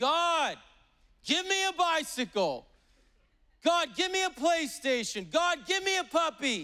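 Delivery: very high, slow shouting at full lungs. Retelling a joke where a boy prays loudly: imitating a boy shouting a prayer. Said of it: "praying at the top of his lungs, shouting".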